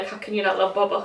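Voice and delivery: normal talking voice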